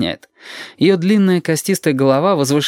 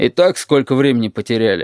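ordinary delivery

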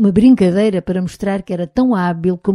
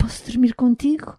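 urgent, beseeching, pleading tone; 5 semitones higher, 4 dB quieter than usual. Reading a story, a man comes into the narrator's room and asks a favor, pleading. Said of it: "em voz suplicante".

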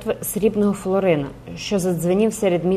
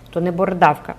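usual speaking voice

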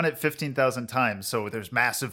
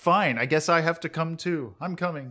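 grudging, reluctant tsundere voice, pitched up; 5 semitones higher than usual. Acting out the ringleader grudgingly agreeing to come: grudging tsundere Haruhi. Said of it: "in a tsundere way. She's like".

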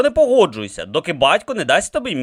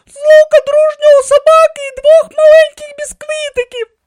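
very high, very loud, shrill delighted cry; 9 dB louder than usual. A woman grabs the arm of the man serving pheasant, exclaiming delightedly. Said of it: "захоплено вигукнула вона".

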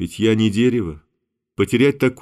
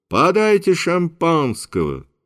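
loud, pitched-up, carrying voice; 8 semitones higher than usual. A man in his own home orders champagne for a toast, loudly. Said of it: "Карандышев громко".

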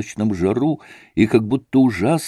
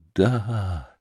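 long, gasping whisper, much lower and quieter; 5 semitones lower, 4 dB quieter than usual. A boy answers his friend's question about his new puppy; long breathless whisper. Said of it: "ответил Илюша длинным шепотом, задыхаясь".

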